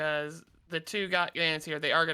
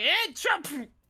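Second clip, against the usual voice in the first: sudden, very high, alarmed, panicked shout; 13 semitones higher, 3 dB louder than usual. Voicing a bandit who sees an attacker: panicked shout. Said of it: "just in panic seeing you, just shouts".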